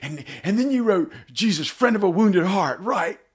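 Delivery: jerky, loud, high-pitched blurted delivery. Retelling first meeting Wayne for a songwriting session, spastic Farley character. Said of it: "I slipped into that character".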